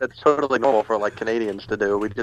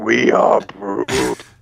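villainous, menacing, sinister evil-sounding delivery; 3 dB louder than usual. Repeating the other speaker's line back: imitating an evil-sounding voice. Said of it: "You just sound evil when you say it".

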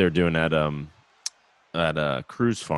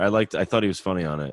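usual speaking voice

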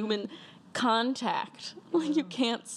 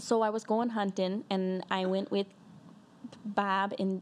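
put-on Wisconsin accent; 3 semitones lower than usual. Asked by the other speaker to show it, the speaker does a Wisconsin accent. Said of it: "let's hear your Wisconsin accent".

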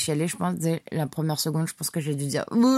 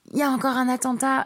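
acted scream, much higher, shouted loud; 9 semitones higher than usual. Recounting a man in a cinema shouting to the whole room as he leaves, retelling a scream. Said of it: "qui hurle dans la salle en mode".

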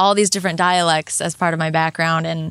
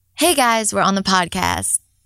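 slight Jersey accent with swooping pitch; 2 semitones higher than usual. Asked to do a voice on the podcast, the speaker tries a slight jersey accent. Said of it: "a little bit of a Jersey flair".

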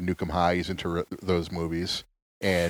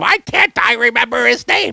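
raspy, high-pitched, loud screech; 11 dB louder than usual. Doing an impression of a comedian whose name the speaker can't recall: Gilbert Gottfried impression. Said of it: "He talks like this".

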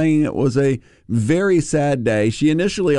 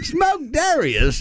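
higher put-on British accent. Joking about smoked rabbit with a co-host: put-on english accent. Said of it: "so that you could do your English voice".

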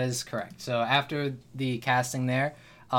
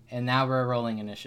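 ordinary talk, nothing marked

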